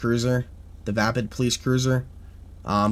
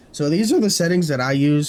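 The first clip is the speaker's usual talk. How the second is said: loud voice crack breaking mid-sentence; 4 semitones higher, 5 dB louder than usual. Explaining the settings used on the trainer when the voice cracks. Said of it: "Sorry for that voice crack".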